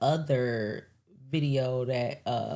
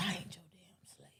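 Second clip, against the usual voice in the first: whispered, hushed put-on Southern accent; 2 semitones higher, 15 dB quieter than usual. Retelling what a woman said back to the speaker, imitating a southern accent. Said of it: "she switched to like a uh southern accent".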